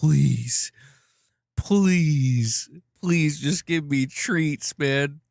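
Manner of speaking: very slow, drawn-out, begging, pleading cat voice. Voicing what a begging cat seems to say: voicing the cat. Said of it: "He's like".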